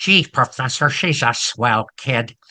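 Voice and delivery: put-on small, boyish voice. Showing the way Bert talks, which you love, use Bert's little boyish voice. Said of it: "kind of a boyish voice".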